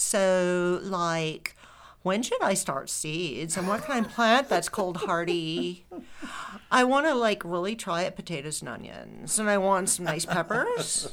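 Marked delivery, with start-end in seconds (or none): 2.0-11.1 creaky vocal fry, endings lifting up. Reading out a written question in a put-on voice, with vocal fry and uptalk. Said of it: "I'm going to do the voice the way I saw it written".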